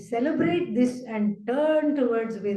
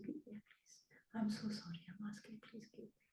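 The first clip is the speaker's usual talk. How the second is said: timid, meek, pleading whisper, barely voiced; 22 dB quieter than usual. Showing the demeanor of a taker who keeps asking: sad, scared wanting person. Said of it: "Doesn't even have the voice to say".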